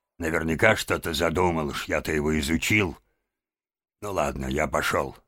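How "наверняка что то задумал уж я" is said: ordinary delivery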